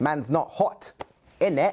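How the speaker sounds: London British accent. Asked to do a typical British accent: London slang British accent. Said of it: "That's a pretty good one".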